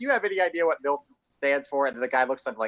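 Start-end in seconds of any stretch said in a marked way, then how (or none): 0.0-1.9 gloating villain talking through laughter, high, taunting. Retelling a villain's taunt: imitating a villain laughing while talking. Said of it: "one of his villains was in there laughing at us".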